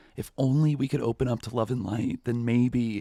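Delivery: high, pure, heartfelt, sincere, earnest concerned voice. Mocking a podcast host talking about kids: imitating a concerned, pure voice. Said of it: "that concerned and pure voice".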